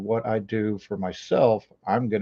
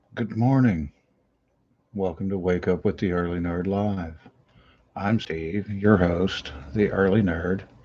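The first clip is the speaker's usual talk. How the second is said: quiet, soft, hushed voice; 3 semitones lower than usual. Host greeting viewers at the start of his live show, talking quietly. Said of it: "I'm talking quietly".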